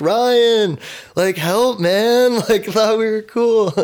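play-acted very high pleading yell, name drawn out. Retelling how the arrested man yelled from the cop car, retelling a yell. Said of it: "yelling, like, Ryan's name".

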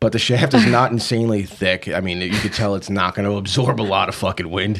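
giggling, words breaking up with laughter. Describing a product's design, laughing while talking. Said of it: "I'm sorry, I'm laughing".

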